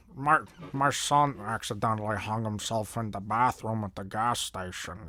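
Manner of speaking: low, put-on character voice. Trying an impression not done in years, impression of someone's voice. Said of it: "I tried to do an impression of his voice".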